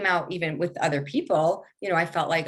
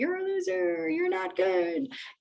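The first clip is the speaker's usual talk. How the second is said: very high, needling, nagging voice; 11 semitones higher than usual. Acting out the inner voice calling from the root: nagging inner critic voice. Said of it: "like, nagging".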